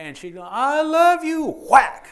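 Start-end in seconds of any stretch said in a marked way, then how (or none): 0.5-1.5 tearful crying voice, pitched very high. Retelling what a woman said while hitting a man, imitating someone crying. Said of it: "She's crying".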